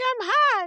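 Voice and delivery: little cartoon-mouse voice, very high. Imitating the other speaker saying they were hot: Minnie Mouse voice. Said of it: "like Minnie Mouse".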